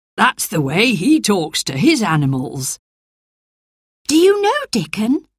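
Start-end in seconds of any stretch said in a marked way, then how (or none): 4.1-5.2 very high, surprised voice. She asks whether the other speaker knows someone he just mentioned, surprised voice. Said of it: "Asked Mary in a surprised voice".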